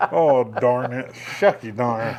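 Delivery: put-on sarcastic voice. Retelling Bud's reaction to Pendleton getting beat, mock-sarcastic as Bud. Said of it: "in his most sarcastic voice possible".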